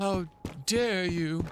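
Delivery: condescending high put-on voice. Announcing an impression, then condescending Greta Thunberg voice. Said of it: "In my most condescending Greta Thunberg voice".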